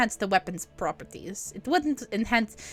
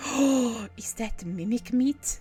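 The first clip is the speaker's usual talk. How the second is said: suddenly surprised gasp, quieter; 4 dB quieter than usual. Voicing a shopkeeper smelling rare meat: surprised gasp. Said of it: "her eyes suddenly go wide".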